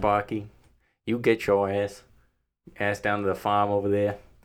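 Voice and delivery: put-on Boston accent. Urged to do the accent, the speaker addresses Spocky in a Boston Kennedy accent. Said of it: "Do the accent".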